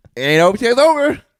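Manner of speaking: taunting high-pitched put-on voice. Imitating the other speaker's catchphrase, imitating someone in high pitch. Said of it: "now I'm high pitch?".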